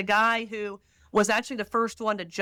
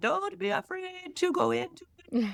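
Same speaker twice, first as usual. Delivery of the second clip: put-on Polish accent, very high, swooping pitch; 9 semitones higher, 3 dB quieter than usual. Quoting John Paul the Second on jumping into the deep, in John Paul II Polish accent. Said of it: "That's my Polish accent".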